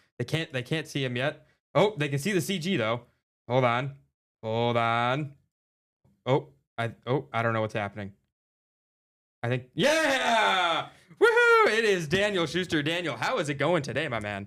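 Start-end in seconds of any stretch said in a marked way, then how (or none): 9.8-12.8 screaming, swooping, yelled host-style delivery. Welcoming a new guest onto the show, screaming into the microphone. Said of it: "Are we always screaming into the microphone".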